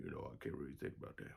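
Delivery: very deep, soft bass voice, dropped as low as possible. Asked who he is, a character introduces himself, very deep Mr. Deepy voice. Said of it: "My voice is so deep".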